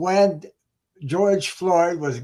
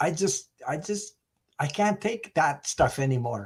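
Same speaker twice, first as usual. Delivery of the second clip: slow, teary-eyed voice, near tears, struggling on; 5 dB quieter than usual. Talking with others on a call, getting teary-eyed. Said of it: "I'm getting teary-eyed right now".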